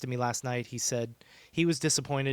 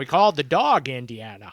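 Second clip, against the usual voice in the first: bad put-on Scottish-accented voice, louder; 8 dB louder than usual. Quoting movie lines in a bad Sean Connery impression. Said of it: "the worst Sean Connery impression".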